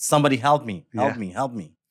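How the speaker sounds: usual speaking voice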